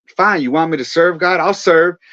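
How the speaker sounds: angry, fed-up, spiteful, defiant. Retelling grabbing the toilet brush after being told to serve: retelling getting mad. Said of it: "So I get mad".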